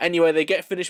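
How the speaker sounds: ordinary delivery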